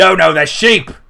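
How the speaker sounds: rough, gruff bellow, very loud. Storyteller voicing a figure with jangling chains walking by: gruff voice. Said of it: "a gruff voice says".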